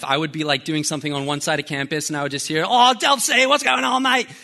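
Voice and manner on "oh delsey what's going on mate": put-on high, loud Australian-accented yell, as if across distance. Recalling a loud Australian guy calling across campus: imitating an Aussie guy yelling. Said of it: "and he just starts yelling".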